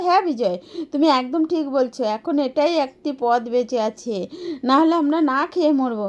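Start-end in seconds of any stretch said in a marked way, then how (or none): none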